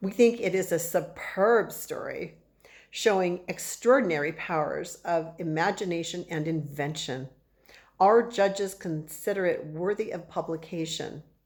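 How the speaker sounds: ordinary delivery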